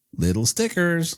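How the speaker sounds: half-dodgy put-on American accent. Looking at little stickers, saying it in a half-dodgy american accent. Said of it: "with a half dodgy American accent".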